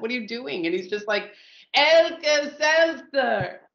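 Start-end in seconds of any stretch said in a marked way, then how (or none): 1.7-3.5 really loud, slow, deliberate, drawn-out, raised voice. Retelling Steve repeating a name at the counter guy: imitating Steve, really loud, slow. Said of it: "He says it really loud and really slow".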